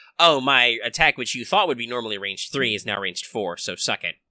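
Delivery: ordinary delivery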